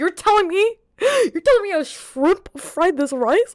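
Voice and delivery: very high, mock gushing, excited enthusiasm. Speaker reenacting how they first said it to the others, retelling an enthusiastic question. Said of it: "I said it with so much enthusiasm".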